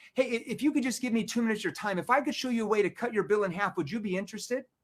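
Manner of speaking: pushy, aggressive, rapid-fire salesman pitch. Demonstrating a door-knock solar pitch to a reluctant prospect, fast aggressive sales tone. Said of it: "Now notice how my tone was. It was a fast tone. It was more aggressive".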